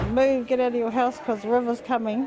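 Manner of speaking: ordinary talk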